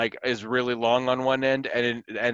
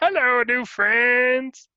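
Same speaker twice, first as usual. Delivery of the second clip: very high-pitched, loud, dim-witted orc voice; 12 semitones higher, 5 dB louder than usual. Showing how a half-orc fighter character talks: dumb half-orc character voice. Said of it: "he talks like this".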